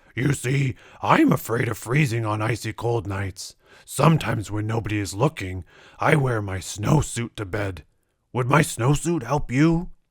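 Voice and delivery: storybook bear voice, words growled. Narrator reading a children's story, the polar bear answers the hero: growling bear voice. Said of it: "growled the bear".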